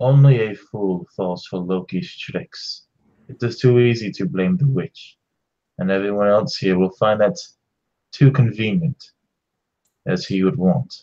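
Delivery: low stage whisper, spoken very close. Narrating a character who leans close to the listener's ear, half-whispered. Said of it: "but Odd whispered".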